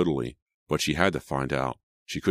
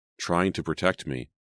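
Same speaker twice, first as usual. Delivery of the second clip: ordinary delivery, nothing marked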